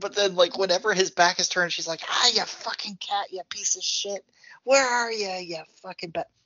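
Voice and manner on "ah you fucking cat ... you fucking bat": put-on drunk cursing, much higher, slower. Describing how Mrs. Mac acts whenever his back is turned; imitating Mrs. Mac's drunk cursing. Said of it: "But she's so drunk".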